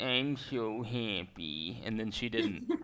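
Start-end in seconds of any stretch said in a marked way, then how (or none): 0.0-1.8 droopy, sad-sounding cartoon dog voice. Speaker recounting a badly timed joke he made to a woman: Droopy impression. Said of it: "I did a droopy dog impression".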